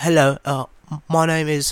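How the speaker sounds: poor put-on British accent. Retelling how a dude introduced himself, in a shitty british accent. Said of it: "Shitty British accent".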